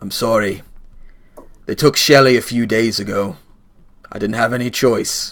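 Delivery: low, rumbling, forlorn voice. Voicing a forlorn axe-wielding character apologizing: rumbling, forlorn voice. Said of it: "rumbles out".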